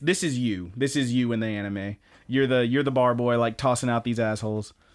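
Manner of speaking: normal talking voice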